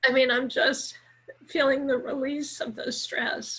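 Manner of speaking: speaking through tears. Explaining to a comforting listener why they're crying, crying while talking. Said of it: "Tell me why you're crying".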